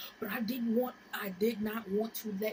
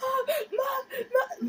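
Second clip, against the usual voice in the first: put-on very high, loud, panicked sobbing like little child; 6 dB louder than usual. Retelling a moment of panic, retelling crying like a child. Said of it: "like a little ass child".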